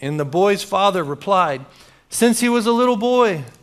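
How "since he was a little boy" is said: high, loud near-yell. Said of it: "They're almost like yelling at this point".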